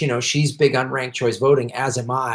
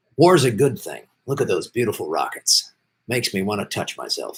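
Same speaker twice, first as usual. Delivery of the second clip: serious, formal news anchor voice; 3 semitones lower than usual. On a show, the speaker shows off a Brian Williams impression. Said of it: "then I'm like Brian Williamson".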